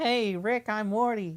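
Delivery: poor fake nervous teenager voice. Mocking a TikTok audition with a terrible impression: terrible Morty impression. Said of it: "they'll just do a terrible impression".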